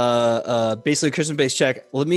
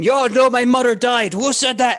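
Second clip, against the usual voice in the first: very high, shrill, furious, raging, acted-out outburst; 10 semitones higher, 4 dB louder than usual. Voicing a sailor storming off and making a scene: storming off angrily. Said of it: "he starts storming off, going".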